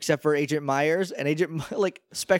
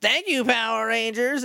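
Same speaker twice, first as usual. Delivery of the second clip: high, creaky, raspy character voice; 7 semitones higher than usual. Retelling a man thanking the group who brought back the crystals, Specs voice. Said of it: "in his Specs voice".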